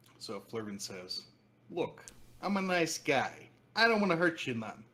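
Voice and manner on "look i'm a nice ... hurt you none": put-on New York accent, raised, high and loud. Game master voicing Flurvin staring at the party, Flurvin's New York accent. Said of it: "he drops the New York accent".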